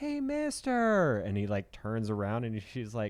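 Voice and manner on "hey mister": put-on very high-pitched, slow little girl voice. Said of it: "this little voice go".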